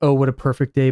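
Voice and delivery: ordinary talk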